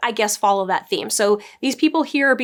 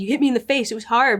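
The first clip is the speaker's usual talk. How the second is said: put-on complaining voice. Retelling a scene where she complained about being hit: imitating someone complaining.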